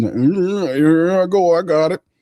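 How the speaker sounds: nasal, high, very slow drawl, yeah drawn out. Imitating a player after a defensive stop: nasal Carl Granderson voice. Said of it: "he talked through his".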